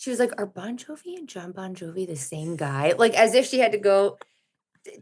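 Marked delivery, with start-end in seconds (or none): 0.4-2.9 soft, hushed, confiding little stage whisper. Retelling a question asked in confidence: imitating a little half-whisper. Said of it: "in a little whisper".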